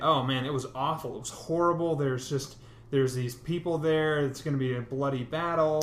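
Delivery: ordinary delivery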